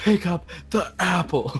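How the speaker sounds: imitated screaming. Retelling how another player screamed over an apple: imitating someone screaming. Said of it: "she's screaming".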